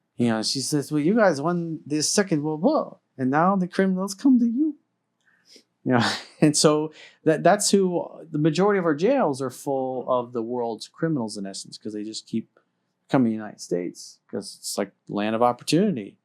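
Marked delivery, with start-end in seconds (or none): 0.9-4.7 put-on German accent, pitched up. Retelling what a friend from europe said years ago, in her german accent. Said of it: "her German accent".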